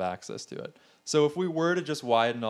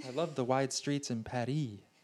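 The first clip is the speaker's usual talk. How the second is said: put-on American tourist voice, quieter; 6 dB quieter than usual. Mocking tourists on a European vacation, voicing Jan from Middle America. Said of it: "That's Jan from Middle America saying that".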